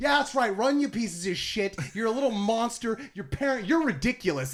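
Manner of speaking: high-pitched yelling, hollering out. Retelling yelling at park visitors who would not stop: imitating own yelling. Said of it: "it's just me yelling at people".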